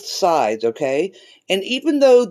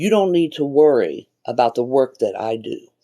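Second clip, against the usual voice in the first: deep, possessed, demonic-sounding man's voice; 6 semitones lower than usual. Retelling what a little child said to the speaker, in a man's demonic voice. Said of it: "a man's demonic sounding voice".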